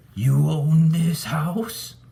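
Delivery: very high, eerie, rasping spectral ghost voice. Reading a ghost's question to the narrator: eerie, raspy ghost voice. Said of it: "the ghost asked me in an eerie, raspy voice".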